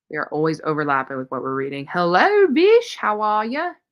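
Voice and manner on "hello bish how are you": very slow, loud put-on Australian accent. Greeting someone on arrival in an attempted Australian accent. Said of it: "I tried to do an Australian accent".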